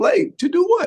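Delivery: very high, loud, incredulous and disbelieving.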